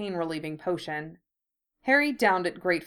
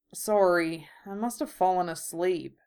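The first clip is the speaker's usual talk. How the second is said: mumbled, muttered speech. Harry, having fallen asleep on a couch, answers Draco, mumbling. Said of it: "Harry mumbled".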